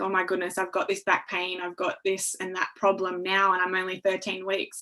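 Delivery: ordinary talk, nothing marked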